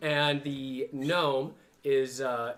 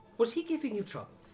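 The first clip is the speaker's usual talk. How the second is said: pitched-up gnome character voice; 8 semitones higher than usual. Voicing a gnome who walks up to the group: voicing a gnome. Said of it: "the gnome speaks".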